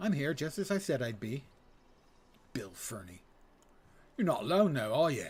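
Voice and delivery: clumsy, bad working-class British accent. Voicing a character who arrives as promised, bad lower-class British accent. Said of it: "my bad uh, lower class British accent".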